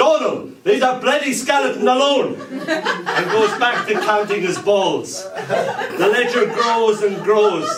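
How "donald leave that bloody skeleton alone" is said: booming army-style voice, pitched up. Speaker retelling their dad's words from his room, dad's booming army voice. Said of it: "my dad's army voice booms".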